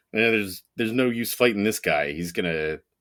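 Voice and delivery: ordinary delivery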